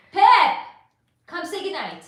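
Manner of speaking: very loud, high, aggressive swooping shout. Signing off and calling someone over to say goodnight, shouting. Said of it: "Sorry for shouting".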